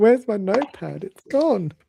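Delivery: put-on sorrowful voice. Teasing another player by mimicking their complaint, in a mock-sad voice. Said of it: "You sounded so sad".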